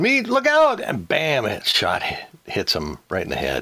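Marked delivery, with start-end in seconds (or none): 0.0-0.8 loud, high-pitched yelling. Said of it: "somebody yells".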